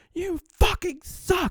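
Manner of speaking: screeching, shrill, full-volume furious scream. Recounting screaming in the basement over a baseball game, retelling screaming. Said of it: "like yelling".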